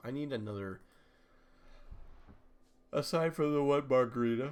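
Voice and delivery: yawning while talking. After joking about needing a be-right-back screen, yawning while talking. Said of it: "excuse me for yawning".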